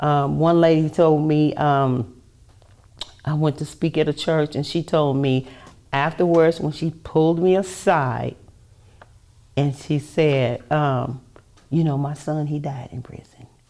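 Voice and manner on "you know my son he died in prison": put-on whisper, quieter. Retelling what a lady said after church: imitating someone whispering. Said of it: "Why are you whispering?".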